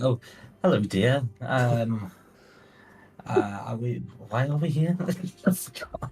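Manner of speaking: sudden calm, kindly niceness, slow and pleasant voice. Voicing a woman who loses her rage and speaks in a nice way. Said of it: "speaks in quite like a nice way".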